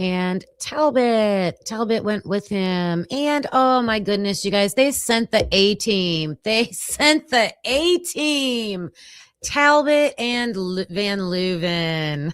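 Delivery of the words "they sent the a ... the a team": dry, ironic, sarcastic tone. Commenting on who was sent to the apartment: sarcastic. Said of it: "Just a little sarcasm over here".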